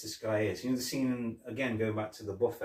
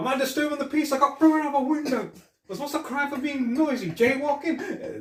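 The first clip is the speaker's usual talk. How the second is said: very high pitched, loud, belted comic voice; 9 dB louder than usual. Retelling joking with police officers who couldn't stop laughing; Eddie Murphy impression. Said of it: "I started doing the Eddie Murphy impression".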